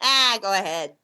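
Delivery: put-on strong New York accent. Retelling what the man who shaped the persona said; new york accent. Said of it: "he's got a very New York accent".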